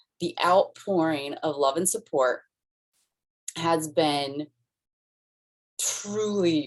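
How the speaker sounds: choked up, tearing up mid-sentence. Speaking of people's love and support after a loss, tearing up. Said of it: "I'm tearing up".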